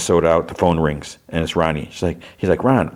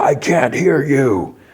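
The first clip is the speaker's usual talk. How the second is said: very slow, high, stretched-out yell; 7 semitones higher than usual. Recapping a tv episode's scene, retelling a character's yell. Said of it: "and he yells".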